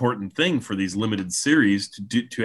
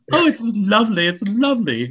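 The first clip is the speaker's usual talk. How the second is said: put-on woman's voice, very high; 11 semitones higher, 4 dB louder than usual. Offering the voice you use for any woman, do your Mrs. Doubtfire impression. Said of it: "I could just do my Mrs. Doubtfire impression".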